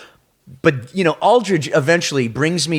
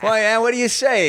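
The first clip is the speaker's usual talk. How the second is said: own accent exaggerated, thicker, higher; 10 semitones higher than usual. Retelling talking with a hero, own accent getting thicker: retelling own thicker accent. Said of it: "all of a sudden my accent gets thicker".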